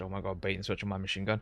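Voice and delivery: sarcastic delivery. Retelling what was just said in the game: imitating own sarcastic remark. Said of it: "I sounded super sarcastic and said".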